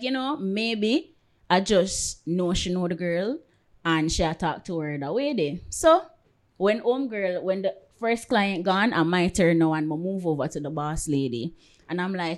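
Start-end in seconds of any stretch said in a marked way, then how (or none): none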